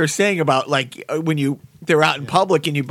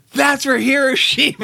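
mock piercing, very high, shrieking scream; 9 semitones higher than usual. Speaker retelling what another player screamed at him after a shot, retelling a scream. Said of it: "he screams".

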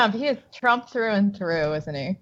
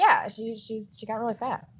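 usual speaking voice

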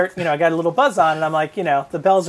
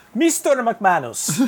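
fake Indian accent, pitched up; 5 semitones higher than usual. Retelling a school owner's role-play of an indian parent, put-on indian accent. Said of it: "he did an accent".

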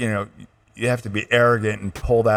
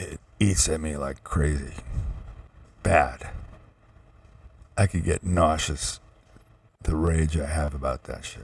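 voice deepening, growing angry and ragey; 6 semitones lower, 6 dB quieter than usual. Talking about how injustice makes them angry, voice going deeper. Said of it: "Voice is going deeper".

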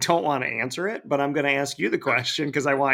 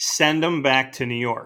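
plain

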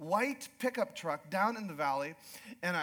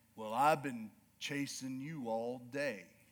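very low, slow, unhurried, calm cowboy drawl; 7 semitones lower than usual. Retelling what a man who deals with livestock said on meeting, in a slow, calm drawl. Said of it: "that slow, calm drawl".

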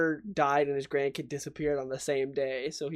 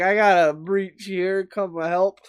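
put-on drunk character voice, louder, higher pitch; 5 semitones higher, 9 dB louder than usual. Retelling a scene where the High Evolutionary calls security, mock-drunk. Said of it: "sort of drunkenly calling security".

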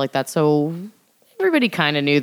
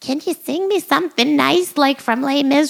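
very high-pitched voice; 12 semitones higher than usual. A speaker acting out her mother talking to her daughter, imitating her mom. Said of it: "that's when I pretend to be my mom".

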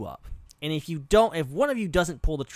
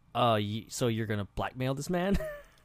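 put-on deadpan delivery, pitched much lower; 3 semitones lower, 4 dB quieter than usual. Speaker retells a movie scene, imitating Morgan Freeman's deadpan. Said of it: "Morgan Freeman's just deadpan like".

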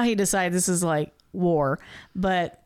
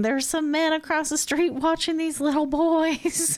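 put-on elderly woman voice, very high; 9 semitones higher than usual. Recounting a plot where Danny makes a fake police call, imitating an elderly woman. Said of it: "acts like an elderly woman".

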